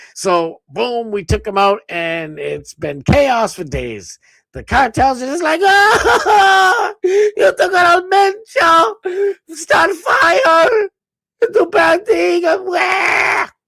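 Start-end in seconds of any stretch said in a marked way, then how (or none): 5.7-13.5 very high, very slow, loud, acted wailing blubber. Mocking the cartels' reaction to losing their leader: mock crying. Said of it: "crying about it".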